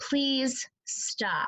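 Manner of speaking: calm, firm, steady, strong tone. Showing how to ask someone to stop without yelling, in a calm, strong voice. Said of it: "in a calm, strong voice, I'm saying".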